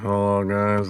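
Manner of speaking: mock flat, unenthusiastic tone. Imitating another speaker's greeting to viewers: imitating an unenthusiastic greeting. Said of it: "so unenthusiastic".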